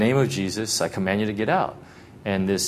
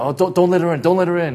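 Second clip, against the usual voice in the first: put-on desperate pleading, much higher, louder, faster; 9 semitones higher, 7 dB louder than usual. Retelling a ghost story, acting out someone begging for their life. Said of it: "just starts begging for their life".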